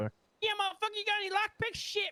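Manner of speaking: very high-pitched, cracky put-on voice. Showing friends his Ratchet impersonation, a cracky Ratchet impression. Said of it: "my cracky impersonation".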